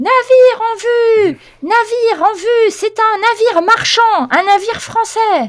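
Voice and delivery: shrill, high, slow bellow with voice cracking. Telling the story, the speaker voices Jean-François spotting a ship: cracking voice of Jean-François. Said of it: "déraille un peu parce que c'est l'âge où ça déraille".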